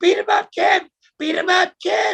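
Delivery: very high-pitched, yelled cheering and urging. Retelling what a person outside the ring yelled, imitating them in a high-pitched voice. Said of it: "the person outside the ring was yelling out".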